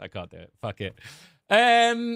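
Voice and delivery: normal talking voice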